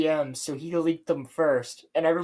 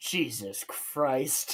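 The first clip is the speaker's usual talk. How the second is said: fed-up, hushed, breathy mutter, totally done; 4 semitones lower, 8 dB quieter than usual. Imitating Gundam pausing a video: imitating Gundam fed up. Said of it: "when he pauses the video and just goes".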